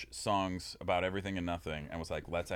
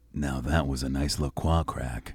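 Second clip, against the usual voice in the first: very loud, slow, booming voiceover announcer voice; 4 semitones lower, 9 dB louder than usual. Messing around after cracking open a lacroix: voiceover voice. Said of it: "I'm just messing with my voiceover voice".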